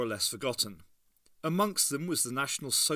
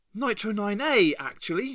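obviously proud, high and raised voice; 8 semitones higher, 7 dB louder than usual. Narrating a story, a character speaks up about her invention, proudly. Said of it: "Ace said proudly".

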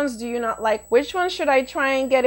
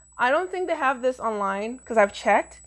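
plain

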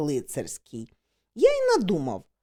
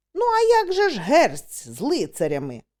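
ordinary delivery, nothing marked

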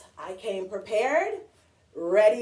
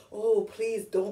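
acted dreadful pleading. Explaining a book character's mood at the end of the book, mock dreadful pleading. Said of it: "like a dreadful way".

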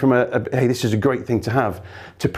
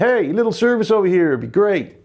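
put-on American accent, pitched up; 7 semitones higher than usual. Host practicing an accent to fit in when visiting listeners, put-on american accent. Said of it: "I'm practicing my American accent".

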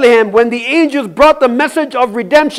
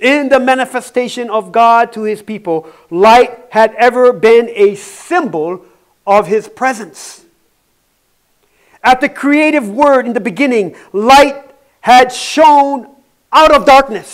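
unhurried, deliberate, very slow, drawn-out reading. Speaker reads a passage aloud so listeners can understand, reading very slowly. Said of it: "I'm going to read this slowly".

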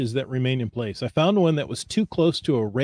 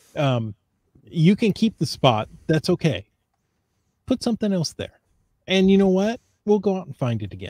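choked-up, welling-up, pitched-up voice; 5 semitones higher than usual. Talking about archiving old caches and refreshing the game board, the speaker sounds choked up. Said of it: "I'm all choked up about this".

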